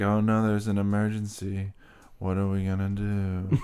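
mock flat monotone delivery. Mocking an actor's line reading with no inflection: imitating a flat line reading. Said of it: "It's flat. Everything is flat".

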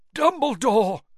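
gasped out, very high-pitched and loud. A man reaches out and seizes a boy's robes, gasping. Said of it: "gasped Mr. Crouch".

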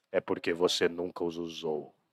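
very deep, hushed, slow and quiet movie voice. Quoting a movie scene where eyes hurt from disuse: Morpheus voice. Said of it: "Com aquela voz, né?".

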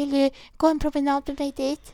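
put-on flustered, panicky, high and loud. Retelling what the speaker asked at around twenty past eight, acting out panic. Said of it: "panik och bara".

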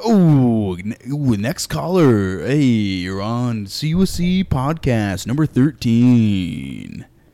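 put-on radio DJ announcer voice. Podcast host opening the episode and taking the next caller, radio DJ voice. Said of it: "Why do I go into a DJ voice".

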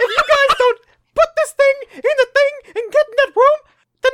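squealed out loud at a very high pitch. Friends take turns doing Mickey Mouse while ordering the group, Mickey Mouse voice. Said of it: "you guys have really good Mickeys".

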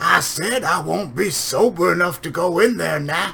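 high, bad screaming voice. Repeating the line when she asks what you said: screaming Foghorn Leghorn impression. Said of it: "I started screaming".

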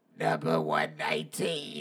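hoarse, rough-throated voice. Imitating the McDonald's worker calling out an order number, imitating a raspy McDonald's worker. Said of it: "with that raspy ass voice".

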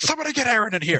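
acted very high shrill scream, calling out. Acting out a phone call, then imitating a scream down the hall. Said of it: "just scream down the hall and say".

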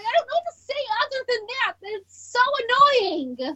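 exasperated, fed-up yelled outburst. Complaining about people starting drama online: yelling. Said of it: "I need to stop yelling like that".

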